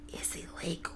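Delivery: voice dropped to a very quiet, hushed whisper. Narrator reads a companion confiding about a rum runner, whisper. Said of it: "He lowers his voice to a whisper".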